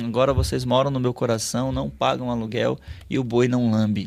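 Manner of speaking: put-on velvety, smooth, very calm voice. Retelling what a man said after receiving a paper flower, imitating a velvety, calm voice. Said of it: "com uma voz toda aveludada".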